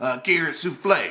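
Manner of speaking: plain reading voice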